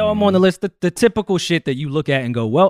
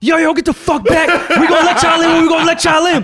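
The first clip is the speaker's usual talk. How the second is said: very high, loud screaming; 13 semitones higher, 6 dB louder than usual. Retelling a friend posing as security at a line, imitating a screaming security guard. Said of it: "pretends to be security and starts screaming".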